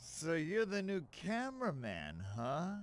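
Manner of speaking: very slow, dragging, drawn-out delivery. Game character greeting the new cameraman, talking very slowly. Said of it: "why is he talking so slow?".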